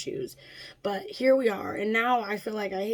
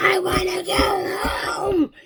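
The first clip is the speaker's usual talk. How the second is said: put-on very high, loud, very slow, drawn-out child scream; 10 semitones higher, 7 dB louder than usual. Retelling a son refusing to leave the car: imitating a child screaming.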